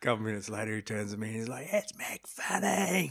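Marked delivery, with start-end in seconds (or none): 1.7-3.1 very high, booming, rough, loud blurted shout. Telling a surf story, acting out a man beside him in the lineup: retelling a loud shout. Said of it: "Really loud".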